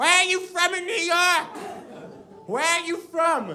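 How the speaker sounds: put-on high, screeching yell, way up high. Retelling a girl screaming a question at a deaf person: imitating someone screaming. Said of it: "she starts screaming".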